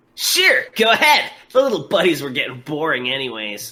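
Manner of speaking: swooping cartoon hero voice. Improvised interview, agreeing to answer the interviewer's questions, in a Saturday morning cartoon hero voice. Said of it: "I'm doing my fucking Saturday morning cartoon hero voice".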